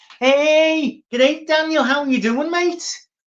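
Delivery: put-on broad Liverpool Scouse accent, pitched very high. Retelling a friend's greeting on an escalator: imitating a broad Liverpool accent. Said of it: "Jeff's really broad Liverpool".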